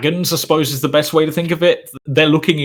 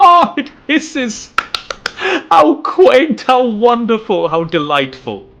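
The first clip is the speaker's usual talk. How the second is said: very high-pitched, laughing amusement and delight; 10 semitones higher, 4 dB louder than usual. Recounting a scene where she reacts to him, laughing while speaking. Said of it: "She just kind of laughs and goes".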